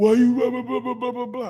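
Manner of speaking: mock furious high yelling rant, words spat out. Telling a listener how they come at the speaker, imitating someone yelling angrily. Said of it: "You come to me all angry, yelling".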